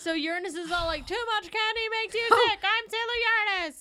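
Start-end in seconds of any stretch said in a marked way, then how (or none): 1.1-3.8 yelling, high and loud. Recapping a scene and quoting a hero's catchphrase, mock-yelling as Sailor Uranus. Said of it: "why are you yelling".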